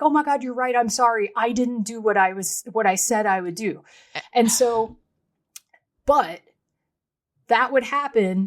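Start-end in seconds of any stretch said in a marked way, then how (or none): 0.0-3.8 put-on teary, tearful, sorry-sounding voice. Recounting how she used to apologize to him: retelling a tearful apology. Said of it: "And I would tearfully be like".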